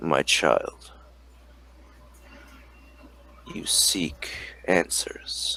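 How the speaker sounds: deep, hushed, resonant thrumming whisper. A narrator voices an unseen presence speaking to a player's character, deep thrumming voice. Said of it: "you can hear this deep thrumming voice".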